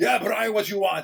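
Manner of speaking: put-on thick, heavy, laid-on German accent. Retelling what a big German guy said to him, in a big German accent. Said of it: "He's got this big German accent".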